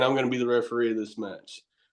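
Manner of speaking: ordinary talk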